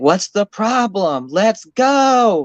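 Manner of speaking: very slow, high, stretched-out angry scream. Describing a TV show, the speaker acts out a woman on the bus at Matthew, retelling a scream. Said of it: "she's screaming at Matthew".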